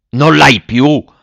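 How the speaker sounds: put-on loud, shocked shout in an old man's voice. An old father, leaping to his feet, to his daughter: shouted. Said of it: "gridò il vecchio saltando in piedi".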